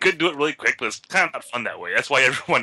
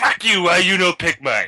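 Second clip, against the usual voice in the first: acted drunken yell, pitched up, drawn out; 5 semitones higher, 4 dB louder than usual. Retelling how drunk players argue over the game: imitating someone yelling. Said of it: "you sit there yelling at each other".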